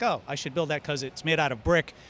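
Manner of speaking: plain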